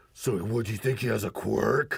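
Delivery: put-on fuming voice. Retelling an anime scene, quoting Bakugo: imitating furious Bakugo. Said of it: "he's, like, fuming".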